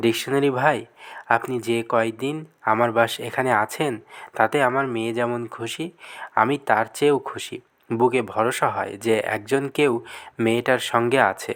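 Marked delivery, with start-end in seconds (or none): none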